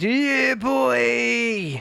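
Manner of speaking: put-on high Cockney geezer accent, boy stretched long. Quoting what he always replies when told about games later, Vaughan impression, Cockney geezer voice. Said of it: "In his little Cockney geezer voice".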